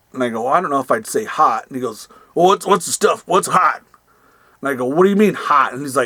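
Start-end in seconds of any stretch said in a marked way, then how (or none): 2.3-3.8 voice pressing on insistently. Retelling a conversation with a man asking what sells, imitating the caller's voice. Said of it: "I'll try to do the voice again".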